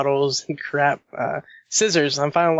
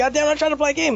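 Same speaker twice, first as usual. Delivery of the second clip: very high, shrill yelling; 13 semitones higher than usual. Retelling yelling at the cat on the keyboard: imitating himself yelling at a cat. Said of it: "yelling at the cat".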